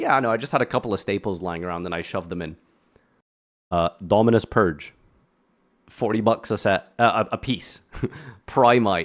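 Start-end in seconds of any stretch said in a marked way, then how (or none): 0.0-2.6 soft, fast, mock nonchalant, dismissive voice. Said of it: "He says that so nonchalantly".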